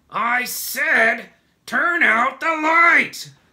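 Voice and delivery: booming, very high, slow, drawn-out furious yell. The centipede, while the others sleep, shouts angrily. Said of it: "shouted the centipede angrily".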